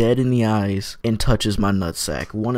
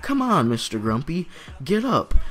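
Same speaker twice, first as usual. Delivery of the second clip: woman's voice, pitched up, rousing call; 7 semitones higher, 4 dB quieter than usual. Retelling how the lady woke him up: imitating the lady waking him. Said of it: "she's just looking at me like".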